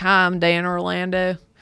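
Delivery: put-on mixed Jersey and Southern accent. Imitating how he introduces himself, mixed New Jersey-Southern accent. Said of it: "he kind of has like a New Jersey accent".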